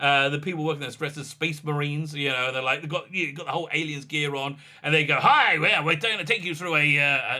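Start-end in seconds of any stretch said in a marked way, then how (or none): 5.1-7.0 clumsy, bad put-on American accent. Imitating staff dressed as space marines starting a tour, terrible American accent. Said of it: "that's my terrible American accent".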